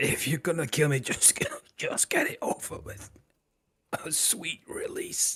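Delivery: wheezy, breathy splutter with cough-laugh through words. Voicing a man who looks at Grog and speaks, with a coughing, spluttering laugh. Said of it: "a coughing, spluttering laugh as he, he looks at Grog and says".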